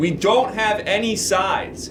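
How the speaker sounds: high, slow, frustrated yell.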